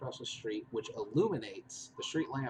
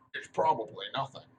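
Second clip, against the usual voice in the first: loud, rough, almost orc-like voice; 5 dB louder than usual. Game narrator voicing a creature as it looks around, rough, orc-like voice. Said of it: "like almost like an orc's voice".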